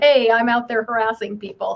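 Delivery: ordinary talk, nothing marked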